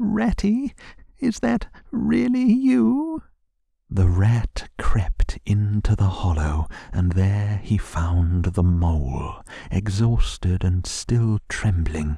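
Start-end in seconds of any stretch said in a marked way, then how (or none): 0.0-3.2 faint, feeble, very high, rough, creaky little voice. From a hollow tree, an exhausted mole calls out to the rat, in a feeble voice. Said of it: "came a feeble voice saying".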